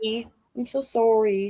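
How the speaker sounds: put-on Canadian accent, especially on "sorry". Showing how Canadians say sorry: imitating a Canadian accent. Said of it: "It sounds like".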